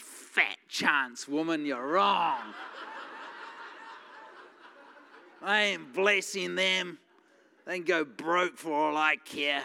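low private mutter under the breath. Retelling a silent reaction to his wife's suggestion: retelling muttering under breath. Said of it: "but under my breath".

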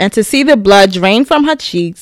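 plain

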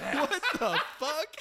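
high, slow laughing disbelief.

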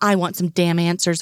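plain reading voice

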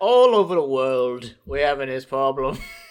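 voice dropped right down low. Joking that every British person sounds the same, speaker imitates a very deep voice. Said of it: "He's a very deep voice. He's like".

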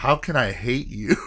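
normal talking voice

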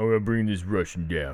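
put-on mumbling tough-guy voice. Quoting movie lines in a Stallone impression. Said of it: "perfect Stallone".

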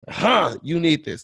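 insistent, pressing, forceful, pushy, acted out. Retelling how a woman pushed a card on the speaker: imitating a forceful demand. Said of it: "Like, forcefully".

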